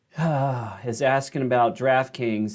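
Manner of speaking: sighing reluctantly through the words.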